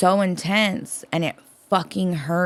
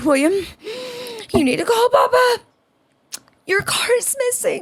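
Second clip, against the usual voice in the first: mock very high, near-tears, panicked, distraught voice. Retelling the night, the speaker acts out her words to William, imitating a distraught woman. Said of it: "she looks distraught".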